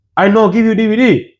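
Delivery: high, slow, put-on Chinese accent. Retelling a man's words to the speaker about a DVD, in a put-on Chinese accent. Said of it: "It was Chinese accent".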